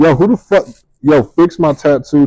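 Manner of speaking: light, playful, half-hearted yell. Pitching a skit idea for a viral video: pretend yelling.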